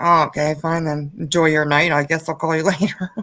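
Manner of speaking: grouchy, grumpy, put-out, grudging voice. Retelling what he said when he got mad: imitating a grumpy guy. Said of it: "he's a really grumpy guy".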